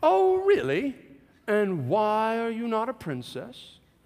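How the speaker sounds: very high, grand, swooping theatrical tone. Father retells answering his daughter while staying in character, in a dramatic tone. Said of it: "I didn't break character. I stayed in it".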